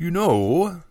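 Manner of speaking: reluctant, unwilling, grudging tone. Narrator reads Jacob the quartermaster speaking to the Master Mage, reluctantly. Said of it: "he started reluctantly".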